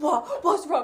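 put-on jolted alarm. Retelling how a mum wakes up when shaken: imitating Liz waking up startled. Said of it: "And she goes".

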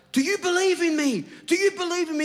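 very high, put-on, loudly shouted call. Retelling the story of a man who crossed Niagara Falls: imitating someone shouting. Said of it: "he shouts out".

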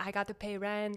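put-on broken English accent. Retelling the subject line of a man's Venmo request, in a put-on broken English accent. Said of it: "I shouldn't do the accent when I say that either".

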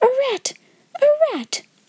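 startled, frightened gasping cry, very high-pitched. Seeing a rat at night, she gasps with fright, crying under her breath. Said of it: "she cried under her breath".

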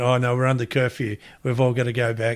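plain

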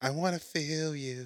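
hushed, creepy, cartoonish fake-romantic voice. Mocking how the other speaker says I love you, mock-creepy romantic voice. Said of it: "You sound like that turd on South Park".

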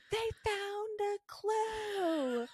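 put-on very high, slow, shrill, drawn-out top-of-lungs yell. Retelling how a woman took over and announced they found a clue, retelling a full-volume yell. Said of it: "she's like yelling at the top of her lungs".

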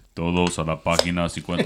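put-on deep male voice. Recalling a man from the morning mass, imitating his deep voice. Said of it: "He had like this deep voice".

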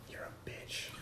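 whispered, quiet.

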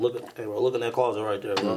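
ordinary delivery

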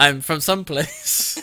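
put-on Irish accent. The speaker acts out what a woman said, in an Irish accent. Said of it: "That was more of an Irish accent".

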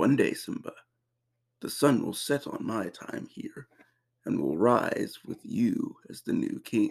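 put-on deep, regal king voice. Quoting a lion king speech to his son: James Earl Jones impression. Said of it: "James Earl Jones impression".

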